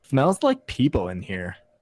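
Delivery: high, mock snarky, stuck-up sneering tone. Retelling a girl's remark to her boyfriend as she walked in, mocking snarky tone. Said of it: "like this snarky ass fucking tone of voice".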